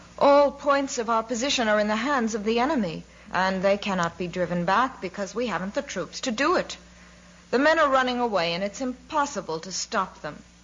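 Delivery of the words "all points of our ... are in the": ordinary delivery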